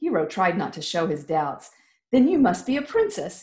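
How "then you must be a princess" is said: playfully teasing tone, pitched up. Reading Hero replying to the girl, teasing. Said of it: "he teased".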